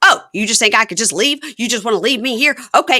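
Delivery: put-on, high, loud, indignant, affronted outburst. Retelling how she reacted when he offered to stay and wait; mock-angry, offended. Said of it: "She gets all mad".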